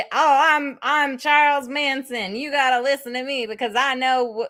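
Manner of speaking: high, slow, dim-witted rural drawl. Imitating Charles Manson for the episode: dumb hillbilly Charles Manson voice. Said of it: "him sounding like some dumb hillbilly".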